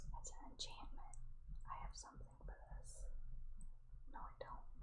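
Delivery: whispering.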